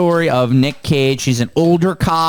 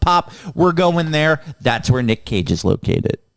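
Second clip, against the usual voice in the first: normal talking voice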